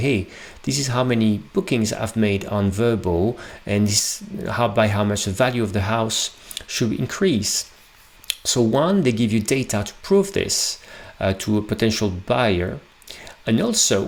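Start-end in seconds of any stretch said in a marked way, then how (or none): none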